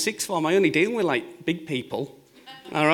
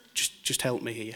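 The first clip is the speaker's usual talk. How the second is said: put-on soft pleading tone, lower in pitch and quieter; 6 semitones lower, 8 dB quieter than usual. Retelling how someone in a bind asks for help: imitating quiet pleading. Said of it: "they're pleading quietly".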